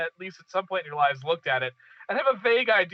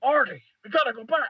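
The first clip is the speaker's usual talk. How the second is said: high-pitched, eccentric character voice; 6 semitones higher than usual. Trying to do a good Christopher Lloyd impression. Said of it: "Wonder if I can do a good Christopher Lloyd".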